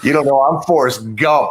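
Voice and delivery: ordinary talk, nothing marked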